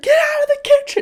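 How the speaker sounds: shrill, very high, loud shout. Retelling how she yelled at everyone: imitating someone yelling. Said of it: "She literally yelled".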